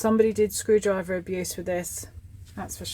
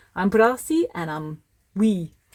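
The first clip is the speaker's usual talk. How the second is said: put-on Scottish accent. Speaker voices their little friend Brassy, Brassy in a Scottish accent. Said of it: "I don't know why I'm talking in a Scottish accent".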